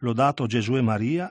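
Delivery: ordinary delivery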